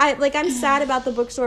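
normal talking voice

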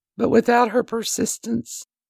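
emotional, tearful crying with voice pitched high. Speaking about a woman's persistence in their life: getting emotional. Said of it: "I'm sorry for getting emotional".

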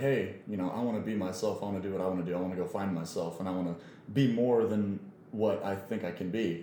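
ordinary talk, nothing marked

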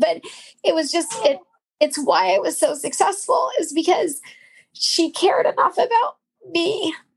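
choked-up, tearful speech. Explaining that your success came from her caring about you, crying. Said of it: "I'm crying".

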